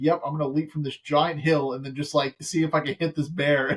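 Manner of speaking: ordinary delivery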